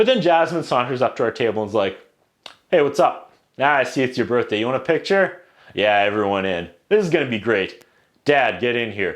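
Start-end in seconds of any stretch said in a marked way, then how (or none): 2.7-9.2 put-on unimpressed voice, much lower pitch. Retelling how Jasmine came up to the birthday table, imitating Jasmine's casual tone. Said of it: "she could care less she's a princess".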